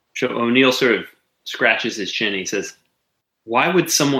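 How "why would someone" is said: acted confused, puzzled tone. Retelling how a man scratches his chin and asks, acting out confusion. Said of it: "So he's very confused".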